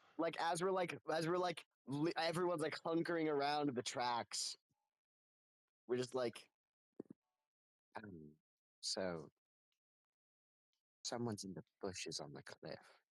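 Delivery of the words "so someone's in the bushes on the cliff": hushed, soft whispering voice. A player in character telling the group, huddled around the tracks, in a hushed voice. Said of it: "like in a in a hushed voice".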